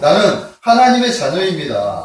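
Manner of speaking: slow, proud, confident delivery.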